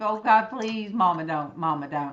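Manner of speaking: plain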